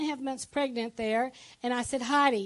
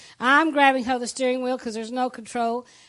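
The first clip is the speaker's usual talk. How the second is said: usual speaking voice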